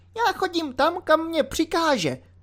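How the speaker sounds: very high, thin little voice. Reading a novel aloud, voicing a man answering a question, in a thin voice. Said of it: "tenkým hlasem řekl Mikulášek".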